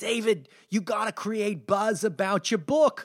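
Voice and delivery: put-on older New York lady voice with New York accent. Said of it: "she talked like this".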